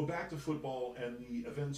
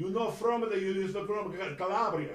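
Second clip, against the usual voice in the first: very loud, high, put-on Italian accent; 6 semitones higher, 8 dB louder than usual. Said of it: "That's pretty good, actually".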